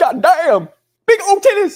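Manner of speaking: put-on sudden shrill scream, old southern man voice, rising. Describing a TikTok woman with Tourette's, imitating her screaming like an old Southern man.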